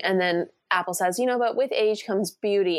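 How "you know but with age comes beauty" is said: usual speaking voice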